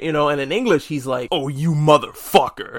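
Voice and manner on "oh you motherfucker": acted-out affronted outrage, wounded and personally attacked. Imitating Aki's line in the English dub: imitating Aki sounding personally attacked. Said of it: "he sounds so fucking, uh, personally attacked".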